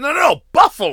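very loud, very high, heated yell. Retelling what Taz said on the show: imitating a heated Taz. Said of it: "Taz was still fucking heated and wanted to be like".

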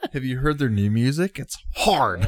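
high, mocking, tongue-in-cheek sarcasm. Praising a band's new music to the others: sarcastic. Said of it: "I feel like you're being really sarcastic".

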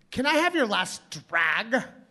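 ditzy, airheaded, dumb-sounding woman voice. Retelling what a stranger on the street asked: imitating a loud, dumb-sounding woman. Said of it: "she sounded really dumb".

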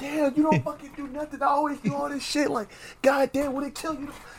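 very high, hushed, griping, nagging angry snap. Retelling a woman snapping at a man, mock-snapping angrily. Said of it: "she's just snapping on him".

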